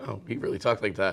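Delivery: ordinary talk, nothing marked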